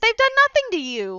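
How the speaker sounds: shouting. In character, pleading with a villain to spare innocent people: yelling at a villain. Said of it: "just gonna yell at him".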